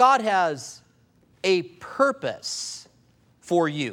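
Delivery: very slow, halting, deliberate, word by word, with pauses. Preaching to listeners and letting the words sink in, slow and deliberate. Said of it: "I said that slow deliberately".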